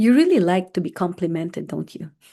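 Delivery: mock patronizing, belittling, insulting tone. Retelling what an ex said when asked a question: imitating a condescending insulting tone. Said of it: "said in such a condescending and insulting manner".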